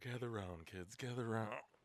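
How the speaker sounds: put-on storyteller story-time voice. Starting to tell a story about a guy you met, put-on storyteller voice. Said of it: "That first voice you did, that was pretty good".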